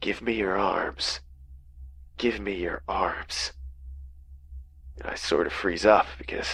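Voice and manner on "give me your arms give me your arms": close, hushed whisper right at the ear. Reading a creature's line in a forest story: whispering. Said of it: "this thing leans in close and whispers".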